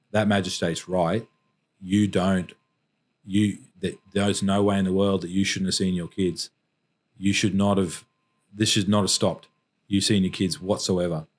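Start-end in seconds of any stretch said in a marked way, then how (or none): none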